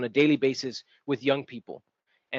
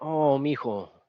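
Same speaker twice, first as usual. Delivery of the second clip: put-on very sad, sorrowful, pitying tone. Retelling what a woman said to him, the speaker imitates her very sad tone. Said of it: "in a very sad tone".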